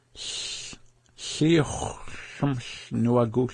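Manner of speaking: very slow, stretched-out delivery.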